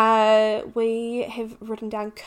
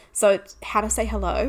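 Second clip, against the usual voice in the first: usual speaking voice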